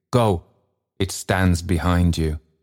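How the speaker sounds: ordinary delivery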